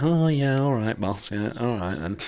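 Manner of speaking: soft, meek, sheepish little dog voice. Voicing the little dog bowing his head when told off: voicing a dog bowing his head. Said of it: "he just kinda bows his head like".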